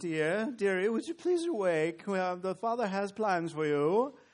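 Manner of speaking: speaking in a British accent. Describing angels, the speaker contrasts the angel from a TV show: Touched by an Angel British accent. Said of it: "it's not with a British accent".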